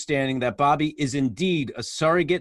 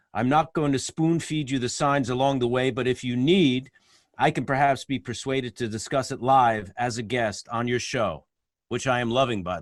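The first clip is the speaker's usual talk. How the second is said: ordinary talk, nothing marked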